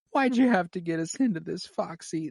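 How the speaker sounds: teary voice. Quoting a tearful movie line: imitating a tearful Meryl Streep line. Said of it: "the eyes fill up with tears".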